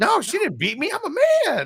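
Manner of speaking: extremely high-pitched, swooping voice. Retelling a police call, the speaker quotes the man in a super high-pitched voice. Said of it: "in a super high pitched voice".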